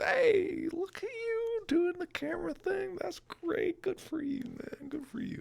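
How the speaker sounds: very high, cheery, praising tone. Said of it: "It was like, there he is".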